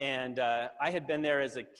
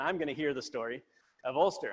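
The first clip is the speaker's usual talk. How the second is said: normal talking voice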